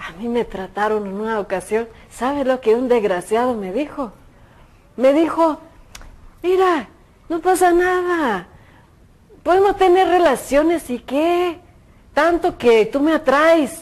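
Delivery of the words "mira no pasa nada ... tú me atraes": put-on all-out Mexican Spanish accent, pitched up. Quoting a man who once tried to persuade the speaker, in a mexican accent. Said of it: "todo el acento mexicano".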